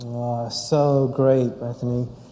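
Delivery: a little sarcastic. Reacting to another speaker's message: a little sarcastic. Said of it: "That sounded a little sarcastic".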